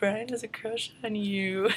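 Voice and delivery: put-on high, slow, teasing, taunting kid voice.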